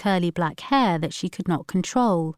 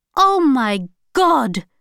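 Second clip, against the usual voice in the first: shrill, loud, shrieking scream of alarm; 6 semitones higher, 6 dB louder than usual. A woman suddenly reacts to a man on the television, screaming. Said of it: "screamed Alsana".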